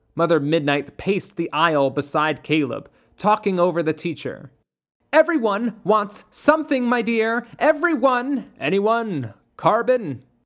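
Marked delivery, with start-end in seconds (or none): 5.1-8.4 louder, rising pitch, building more and more violent. Mother Midnight talks over the teacher in class to Caleb: growing louder and violent. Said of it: "Her voice grew louder and more violent".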